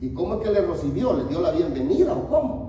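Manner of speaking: fast, sarcastic delivery.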